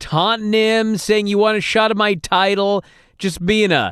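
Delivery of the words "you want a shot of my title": plain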